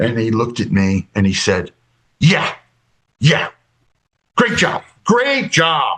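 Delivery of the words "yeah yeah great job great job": biting, scornful, withering sarcastic tone. Retelling what a Gray said after the failure: imitating withering sarcasm. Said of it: "Just withering, uh, sarcasm".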